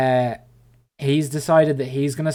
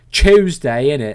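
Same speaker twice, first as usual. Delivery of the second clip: loud, exaggerated, aggressive British accent; 6 dB louder than usual. Redoing a word to sound more british: aggressively british accent. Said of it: "I don't think I said Tuesday quite as aggressively British enough".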